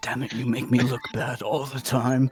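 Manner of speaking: under-the-breath mutter. A character who was just commanded to release a prisoner reacts: muttered under breath. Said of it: "sort of says under his breath".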